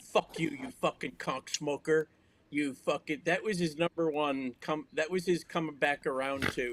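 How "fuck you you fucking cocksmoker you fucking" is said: put-on drunk ranting voice. Retelling an offended man's phone message, imitating a drunk rant. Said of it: "he was he was really drunk".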